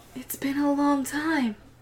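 whispering voice. Voicing a being speaking from under the water: whisper from the depths. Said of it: "You hear a whisper from under the depths".

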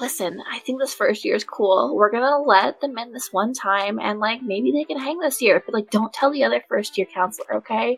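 loud, projected stage whisper. Leaning in to Zad so Champ can overhear, in a loud whisper. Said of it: "I lean forward and I whisper, but it's a loud whisper".

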